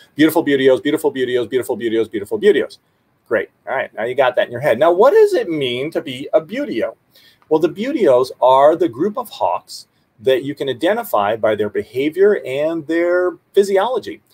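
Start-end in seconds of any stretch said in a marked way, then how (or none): 0.2-2.8 rapid, rattled-off tongue-twister style repetition. Leading a group to repeat a nickname three times, saying it three times fast. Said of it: "now say it three times fast".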